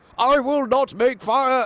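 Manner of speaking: very high, slow, deliberate shout. Retelling a scene where the Doctor shouts back: imitating the Doctor shouting. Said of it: "the Doctor shouts".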